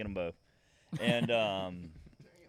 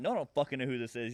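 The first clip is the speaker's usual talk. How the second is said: put-on, mock-angry, acted-out angry delivery; 4 semitones higher than usual. Telling a story about a phone call from a buddy, retelling an angry reply. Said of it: "I'm just like angry as hell".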